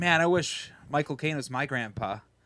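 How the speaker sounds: ordinary delivery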